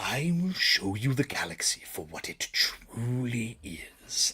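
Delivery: very slow delivery, every word drawn out. Doing a requested impression, quoting a trailer line: Maul voice. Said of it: "when he says in the Maul Shadow Lord trailer".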